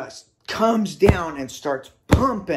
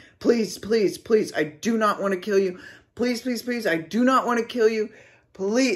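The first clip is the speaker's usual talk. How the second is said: put-on begging, pleading tone; 5 semitones higher than usual. Retelling a standoff with an angry mother, retelling begging. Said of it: "and I am begging".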